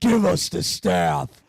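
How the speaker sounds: altered voice, voice-changer sound. Retelling a prank during an interview: imitating a voice changer voice. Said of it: "I turn on my voice changer".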